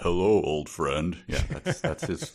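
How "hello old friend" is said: put-on deepened voice. Retelling a phone call, quoting the caller's greeting, retelling a deepened voice. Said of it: "Martin made his voice deeper".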